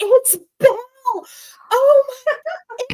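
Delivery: shrill, very high, very loud, drawn-out excited shrieking. Retelling the neighbor's reaction when the speaker got out of the car, imitating excited screaming. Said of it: "she was screaming".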